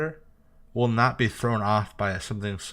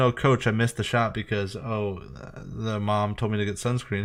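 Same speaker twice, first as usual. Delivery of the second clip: ordinary talk, nothing marked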